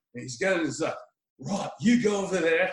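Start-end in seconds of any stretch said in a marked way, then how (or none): 1.3-2.7 put-on Australian accent. Retelling a movie scene, quoting a ninja: australian accent. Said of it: "And he sounds like Steve Irwin".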